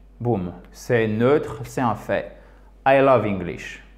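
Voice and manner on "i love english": pitch falling on the word English. Showing a neutral english statement to french learners, falling intonation at end. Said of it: "intonation descendante".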